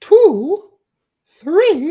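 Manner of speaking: put-on cartoon owl voice. Repeating the count again: Tootsie Pop Owl voice. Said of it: "I was the Tootsie Pop Owl".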